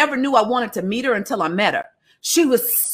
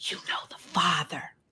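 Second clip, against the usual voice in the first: very quiet, secretive, conspiratorial whisper; 5 semitones lower, 13 dB quieter than usual. Speaker retells what a woman said at the end of the night, retelling a conspiratorial whisper. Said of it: "she's whispering conspiratorially".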